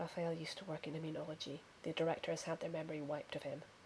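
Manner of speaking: very quiet, low, rapid, hushed mutter. Threnody mutters to the others as he walks away, quick, quiet mutter. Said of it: "mutters to the others very quickly, very quietly".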